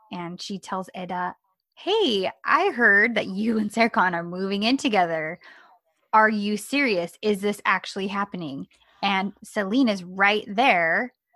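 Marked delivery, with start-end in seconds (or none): none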